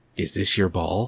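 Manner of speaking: very creepy, unsettling, sinister-sounding voice. Retelling the best film line to another speaker: creepy Richard Jordan impression. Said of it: "couldn't be any more creepy when he says".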